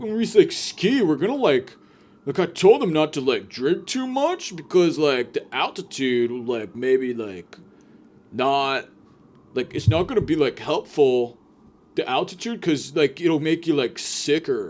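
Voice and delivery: mock, slightly drunk-sounding man's voice. Imitating a rich guy telling his vacation plans: imitating a guy who sounds kinda drunk. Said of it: "always sounds like he's kinda drunk".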